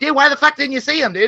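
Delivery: put-on very high, whiny, bratty little-kid gamer yell. Mocking people who complain all the time: imitating kids playing Xbox. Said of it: "they just sound like little kids playing Xbox".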